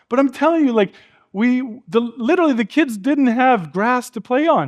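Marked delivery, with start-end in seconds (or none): none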